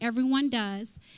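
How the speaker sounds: normal talking voice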